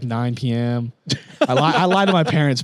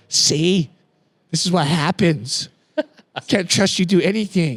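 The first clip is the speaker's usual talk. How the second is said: imitated scolding tone, higher pitch; 4 semitones higher than usual. Retelling how his mom reacted to his crash: imitating his mom scolding. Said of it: "my mom's like".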